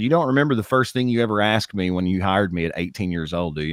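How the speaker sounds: ordinary delivery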